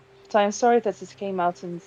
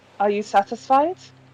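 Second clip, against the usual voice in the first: normal talking voice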